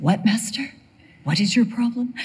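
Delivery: lofty, noble, dignified speaking voice. Voicing the imagined reply to master the way Brian does: noble voice. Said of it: "Brian gives him this noble voice".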